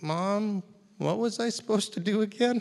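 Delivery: very high, shy, timid little voice. Retelling how a boy called to his mom from the kitchen, imitating a shy little voice. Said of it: "this very shy little voice go".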